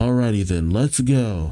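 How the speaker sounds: ordinary delivery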